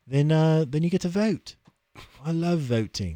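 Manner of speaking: put-on speaking in a London accent. Pitching a Patreon membership to listeners, in a London accent. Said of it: "I switched to a London accent".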